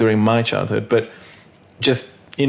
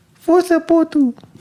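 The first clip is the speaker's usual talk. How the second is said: mock baby talk, higher; 3 dB louder than usual. Retelling own first words to a parent while still learning to speak: baby voice. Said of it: "in a baby's voice".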